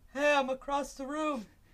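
very high thrown voice, sounding far off. Showing others he can throw his voice, thrown voice from across room. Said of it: "That really sounded like you were across the room".

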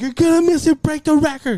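mock yelling way up high, shrill. Retelling urging a dad to watch the record: retelling yelling at dad. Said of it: "I started yelling at my dad".

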